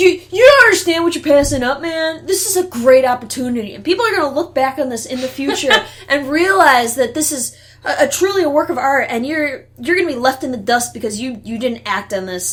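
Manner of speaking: loud, mock huffy, affronted, indignant tone. Retelling how a man got indignant after a refusal: imitating an indignant man. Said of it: "he got all indignant".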